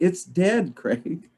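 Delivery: acted, shrill, very high yell called out. Retelling what another person yelled down to the speaker, retelling a yell. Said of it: "And she yells down".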